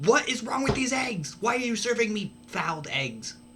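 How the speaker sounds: exasperated, frustrated, very high-pitched outburst. Playing a character pounding a fist on the counter over eggs: frustrated complaint. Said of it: "being very frustrated about it".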